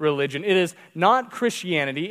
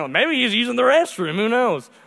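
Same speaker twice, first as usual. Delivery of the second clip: mock sarcastic, scornful, pitched-up mocking taunt; 5 semitones higher than usual. Retelling how a prophet made fun of them, retelling a mocking taunt. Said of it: "He starts making fun of them".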